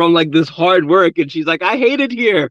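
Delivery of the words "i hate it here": put-on tearful voice, higher. Retelling a sister's nightly complaint about a new home: imitating sister crying. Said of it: "My sister would cry every night".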